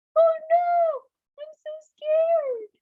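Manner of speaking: very high, squeaky, scared tiny mouse voice. Telling the mouse and lion story, voicing the mouse in a really high-pitched mouse voice. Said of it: "the mouse was speaking in a really high pitch".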